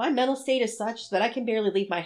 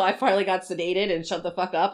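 ordinary talk, nothing marked

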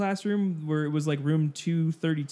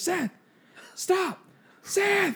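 very high-pitched, screaming yelp; 14 semitones higher than usual. Retelling how she yelled at a student walking through: imitating a teacher screaming. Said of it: "screaming at him".

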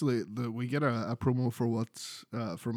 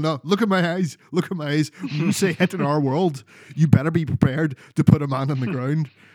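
put-on sharp snap, louder, higher; 4 semitones higher, 11 dB louder than usual. Recounting how Kingston got in Jericho's face: retelling someone snapping. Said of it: "Kingston sort of just snaps, gets right in his face".

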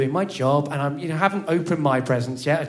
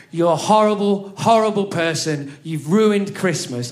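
reined-in, high, raised angry shout; 5 semitones higher, 5 dB louder than usual. Retelling what mum said on christmas, imitating her shouting. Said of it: "I'm not shouting as loud as she was shouting".

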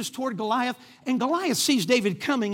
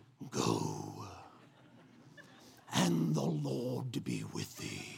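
very deep, very slow, drawn-out, gravelly royal voice; 11 dB quieter than usual. Imagining how a king would say the line: Darth Vader voice. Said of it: "Kings have the Darth Vader voice, right? I can hear him".

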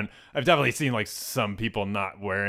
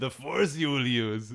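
put-on French-accented character voice, higher; 4 semitones higher than usual. Describing a European Star Wars dub, doing a French-accented Yoda voice. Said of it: "Everybody's got a French accent".

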